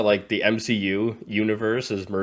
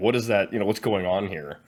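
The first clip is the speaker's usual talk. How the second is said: ordinary talk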